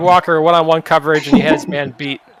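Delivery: ordinary delivery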